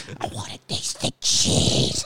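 spooky little monster voice, creepy and small. Joking around about cheese, in a creepy little ghoul voice. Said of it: "sounds like some little ghoul".

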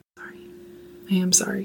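quiet whispering. Apologizing again to the other host after making a noise, whispering. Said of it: "Don't whisper to me now".

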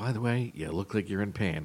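quiet, gentle delivery. Retelling a remark that was made in a softer voice: softer voice. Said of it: "And then in a softer voice".

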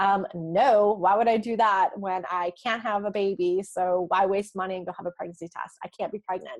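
mock sassy, snarky, dismissive tone with attitude. Retelling her reply to a coworker's question: imitating her own sassy reply. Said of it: "me being sassy and snarky".

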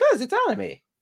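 suddenly high-pitched voice. Commenting on an anime reveal, voice jumping high. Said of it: "why did your voice go high?".

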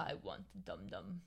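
very soft, rough, creaky, slow-witted dopey voice. Describing how a guy talks, the speaker imitates the Night at the Museum thing. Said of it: "he speaks like the thing from Night at the Museum".

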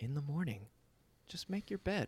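very quiet, hushed, nice soothing and calming voice. Mocking what daily-routine advice always says: mock nice calming voice. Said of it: "nice, calming voice".

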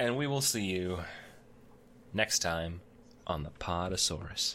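low, sultry, come-hither voice. Closing the podcast, the host signs off to listeners with a sultry delivery. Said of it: "Why'd you become all sultry about that one on the last part there?".

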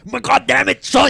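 rough, fed-up, angry scolding yell, high pitched. Among several speakers discussing alligator skulls: imitating an angry yell. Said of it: "start yelling at you like".

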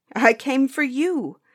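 slow, drawn-out, high, loud crying out. Reading a character's reply to his sister in a tale, crying out. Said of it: "Child Roland cried".

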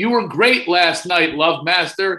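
loud, slow yelling call.

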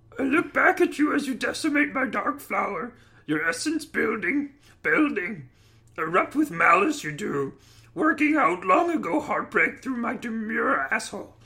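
put-on little alien sage voice. Reading a comic erotic passage aloud: Yoda voice. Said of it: "It was even more beautiful in Yoda's voice".

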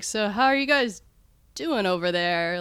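put-on drunk, tipsy man's voice. Retelling a movie scene where a man gets drunk: imitating a drunk man. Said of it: "a little drunk".

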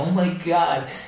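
high, breathless, emotional gasp. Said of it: "I was all emotional and, like, out of breath".

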